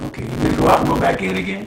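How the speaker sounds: fast, rasping, distorted voice.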